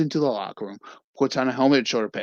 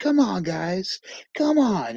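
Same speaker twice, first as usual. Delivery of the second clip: urgent, high-pitched, drawn-out yelling; 8 semitones higher than usual. Retelling a movie scene where a boy yells at his hands: imitating someone yelling. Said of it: "He's, like, yelling at his hands".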